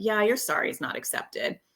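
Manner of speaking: put-on sarcastic tone all the way through. Retelling how an apology gets answered, imitating own sarcastic reply. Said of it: "we'll do it sarcastically".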